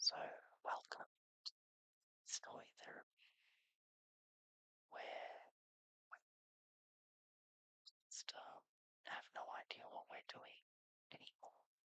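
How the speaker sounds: whispered, very soft throughout. Welcoming viewers to Story Therapy while sewing: whispering. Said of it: "continue to do this in a whisper".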